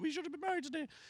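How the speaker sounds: mock very high, tearful, sobbing crying. Acting out what the partner would say on the wedding day: imitating someone crying. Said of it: "she starts crying, going".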